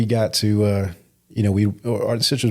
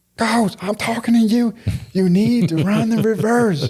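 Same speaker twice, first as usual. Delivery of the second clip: put-on fan yelling, higher pitch; 13 semitones higher than usual. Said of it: "yelling at me".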